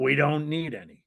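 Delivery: rough, gruff tough voice. Retelling a phone call with a tough-sounding man answering: rougher than Marlon Brando in The Godfather. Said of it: "he would make Marlon Brando in The Godfather sound like an angel".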